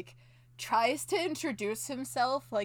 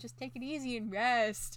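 normal talking voice

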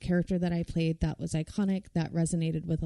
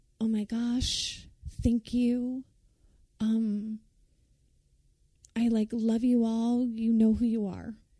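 higher-pitched formal speech delivery; 5 semitones higher than usual. Retelling thanking the crowd on getting an award: imitating own past acceptance speech. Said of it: "You do a really great [name] impression".

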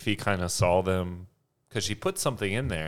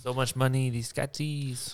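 put-on pitched-up French accent; 6 semitones higher than usual. Telling a story about Peter and two girls, quoting Peter in French accent. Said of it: "but with a French accent".

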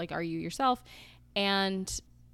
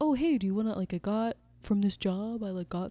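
put-on halting guy voice, stumbling over words; 3 semitones higher than usual. Recapping a man inviting a woman to a jazz event, made-up voice for him. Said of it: "I don't know why I'm giving him that voice".

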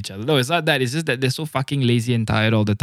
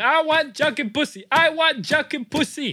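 put-on, very high shrieking scream. Retelling what was screamed in a previous episode: retelling own screaming. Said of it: "I was screaming".

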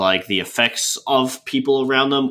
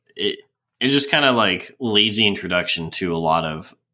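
ordinary talk, nothing marked

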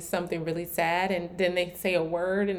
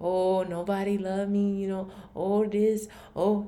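put-on elderly character voice. Mocking a victim mindset in telling life stories, the speaker uses an old person voice. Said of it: "that's my old person voice".

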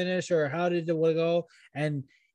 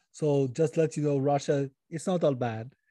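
heavy put-on Russian-Austrian accent; 3 semitones lower than usual. Pitching a joke twist where the character unmasks as Putin, in a Russian Austrian accent. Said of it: "doing a very Russian Austrian accent".

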